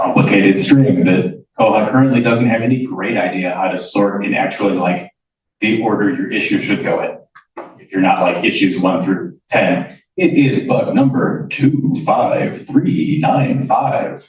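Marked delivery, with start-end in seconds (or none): 10.2-14.3 odd announcer voice, pitched up, very slow. In a software meeting, reading out a bug number: weird announcer voice. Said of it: "my weird announcer voice".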